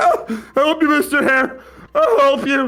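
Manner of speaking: acted crying, tearful sobbing voice. Playing a panicking character between tears, pointing: crying in character. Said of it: "between tears".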